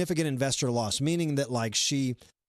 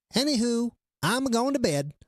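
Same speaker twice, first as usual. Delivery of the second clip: put-on, cute, neat little pitched-up voice; 9 semitones higher than usual. Retelling what she said when she chimed in on the chat, imitating a neat little voice. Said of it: "she's got a neat little voice".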